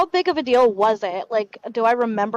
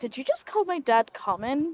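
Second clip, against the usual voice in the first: hushed, barely voiced mutter under the breath; 2 semitones higher, 7 dB quieter than usual. Voicing a character who answers Lucian's remark: muttered under her breath. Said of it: "under her breath".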